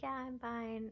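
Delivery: soft, tearful, put-on crying voice. Retelling answering a staff member who asked if they were okay: imitating crying speech. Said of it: "Like literally crying".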